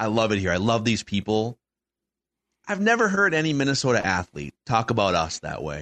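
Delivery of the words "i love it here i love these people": mock tearful speech, put-on breaking down. Retelling an athlete breaking down over a city's fans: imitating someone breaking down. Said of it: "he starts breaking down".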